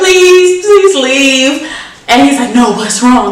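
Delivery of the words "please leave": tearful, pitched-up pleading, holding back tears. Retelling asking someone to leave, imitating holding back tears. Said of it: "Like me holding back the tears".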